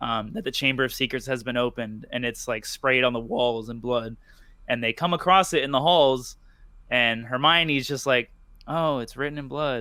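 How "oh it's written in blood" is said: toneless, flat deadpan reading, acted out. Imitating how Hermione reads the words off the wall: flat Hermione impression. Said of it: "that's exactly how she says it".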